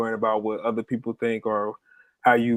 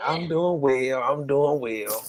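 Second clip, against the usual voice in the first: mocking old woman voice, higher; 3 semitones higher than usual. Mimicking another speaker's reply to a greeting: imitating someone sounding like an old woman. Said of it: "that's how you sound, like an old woman".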